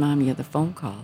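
plain

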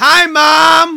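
very shrill, very loud, high yell, word drawn out. Yelling a shout-out to a supporter on a podcast: yelling a shout-out. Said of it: "you will yell".

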